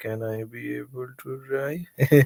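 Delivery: weak, faint, soft, slow little voice. Retelling asking her whether they could drive, imitating a feeble voice. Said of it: "with a very feeble voice".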